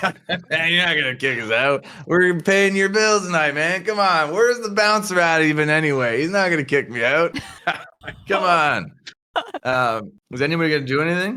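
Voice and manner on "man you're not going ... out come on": put-on very drunk, sloppy, slurred words. Tacitus answers a man threatening to get them kicked out, Tacitus drunkenly slurring. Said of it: "super drunkenly sort of slurring his words".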